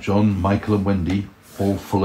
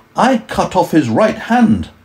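proud, very high and loud; 10 semitones higher, 7 dB louder than usual. Peter answers Wendy's questions, proudly. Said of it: "said Peter proudly".

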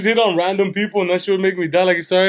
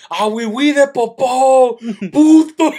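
high, very slow, stretched-out yell, acted out; 5 semitones higher, 4 dB louder than usual. Retelling how a man yelled whenever the opposing French player touched the ball, retelling a yell. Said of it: "he would just yell".

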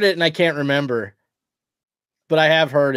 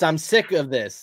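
ordinary talk

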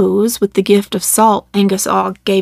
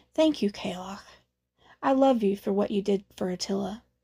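very quiet, soft, hushed; 13 dB quieter than usual. Meg adds a few words to the kalok, very quietly. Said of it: "Then he added very quietly".

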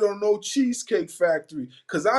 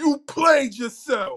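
put-on taunting voice, pitched up, rubbing it in; 5 semitones higher than usual. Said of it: "In my funk flex voice".

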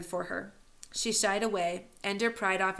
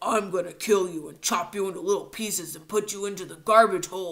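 loud, fake, hammed-up monster voice; 6 dB louder than usual. A narrator reads a laughing character taunting the others, in a phony monster voice. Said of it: "In a phony monster voice".

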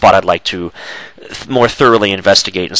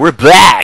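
jived-up upbeat host voice, raised and pitched up; 7 semitones higher, 5 dB louder than usual. Redoing the return from a break: jived up, not monotone. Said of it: "I thought I'd jive it up a little bit".

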